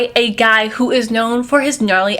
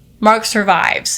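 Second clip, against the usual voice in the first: usual speaking voice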